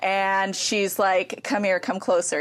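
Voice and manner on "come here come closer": ordinary talk, nothing marked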